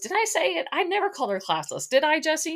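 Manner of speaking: playful, very high, joking, teasing voice. Act out how he turned to Jesse about calling Charity classless, retelling a joking question. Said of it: "he like jokingly asked Jesse".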